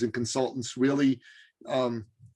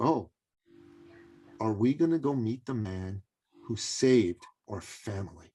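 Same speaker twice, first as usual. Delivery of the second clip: put-on soft, solemn, all-serious little boy voice. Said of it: "he looked at me all serious".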